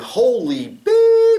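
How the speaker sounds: excited, high, loud, drawn-out yell.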